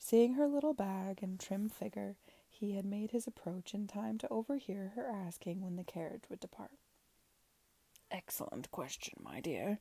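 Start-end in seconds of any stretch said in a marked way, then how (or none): 8.1-9.8 very low, hushed, secretive, conspiratorial tone. Approaching a woman who asked when the carriage departs, he speaks in a conspiratorial tone. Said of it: "he said in a conspiratorial tone".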